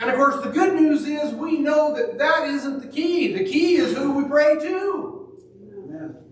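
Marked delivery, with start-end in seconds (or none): 0.0-5.3 really loud, high-pitched shouting. A speaker addressing listeners, shouting really loud. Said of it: "I'm shouting really loud today".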